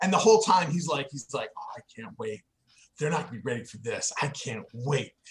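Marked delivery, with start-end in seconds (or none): 1.3-5.1 low, eager, excited murmur, itching to go. Narrating a game, voicing a character leading the players toward a fight: super psyched. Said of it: "So he's super psyched".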